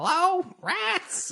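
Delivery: high, squeaky little rat voice. A player greeting the rats after opening the basement door: rat voice. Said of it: "in rat uh, voice".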